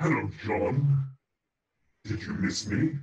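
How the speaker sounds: big, loud dinosaur monster voice. Voicing a T-Rex that turns around and sees the characters: T-Rex voice. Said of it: "the T-Rex looks and says".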